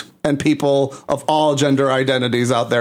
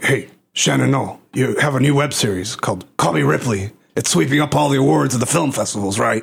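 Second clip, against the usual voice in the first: put-on, forced, pushed masculine voice. Speaker offers to show how they can force-masculinize their voice: forced masculinized voice. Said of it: "I can force masculinize my voice. Do you want to hear it?".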